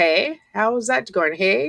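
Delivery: put-on Canadian-esque accent in TV style. Speaker mimics how people on Canadian shows say hey, Canadian-ish accent. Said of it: "I hear that a lot on the Canadian shows".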